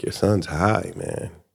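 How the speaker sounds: quiet, hushed whispered aside. Retelling what a doctor whispered to the speaker's dad: retelling a whisper. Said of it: "the doctor just whispered to my dad".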